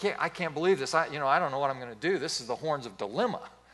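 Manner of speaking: acted, can't-believe-it astonishment, incredulous and disbelieving. Retelling a phone call from his son about a paycheck: imitating an incredulous tone. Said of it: "he has this tone of incredulity in his voice".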